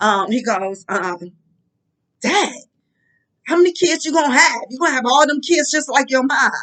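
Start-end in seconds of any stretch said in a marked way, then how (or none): 2.2-6.5 quick, very rude delivery. Retelling what he asked once the speaker started having kids, mock-rude tone. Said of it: "he go very rudely".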